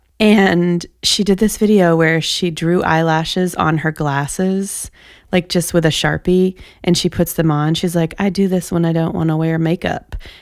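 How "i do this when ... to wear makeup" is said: put-on drifting into a Southern accent. Quoting an older woman from her video, slipping into a southern accent. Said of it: "I don't know why I just sounded Southern".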